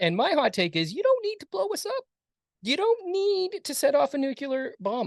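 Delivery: high-pitched voice. Addressing future ai with a hot take in a high voice. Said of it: "I don't know why I'm doing my high voice".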